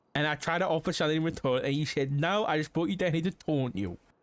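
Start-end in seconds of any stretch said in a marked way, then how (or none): none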